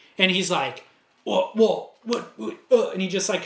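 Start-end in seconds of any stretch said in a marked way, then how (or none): 1.3-2.9 tripping over each word, halting stuttered stammer. Retelling a surfer's answer, imitating someone stuttering. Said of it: "kinda stuttered".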